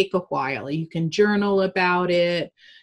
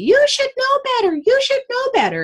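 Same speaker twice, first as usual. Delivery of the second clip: mock very high, frantic, shrill shrieking; 5 dB louder than usual. Retelling how their mom yelled at them as a two-year-old, imitating mom shrieking. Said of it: "she starts shrieking at me".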